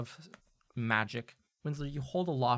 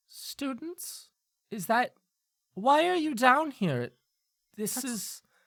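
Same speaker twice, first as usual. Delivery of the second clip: very high-pitched professor-type teacher voice; 12 semitones higher, 4 dB louder than usual. Voicing a caged professor who spots students: Professor Helena Doss voice. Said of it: "recognize this immediately as the voice of one Professor Helena Doss".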